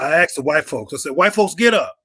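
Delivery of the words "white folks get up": mock, deliberately cheeky, attitude-laden delivery. Retelling an exercise at a university: imitating his own attitude-filled command. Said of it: "I said it with an attitude on purpose".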